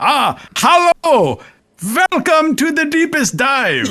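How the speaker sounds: slow, partial German accent. Suggesting a game-character catchphrase: half german accent. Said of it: "a half German accent".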